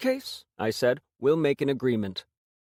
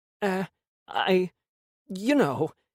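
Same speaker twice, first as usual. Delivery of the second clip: very slow, halting, pitched-up stammer; 5 semitones higher than usual. Reading a story where a fidgety buyer starts to answer: stuttering. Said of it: "he began, stuttering".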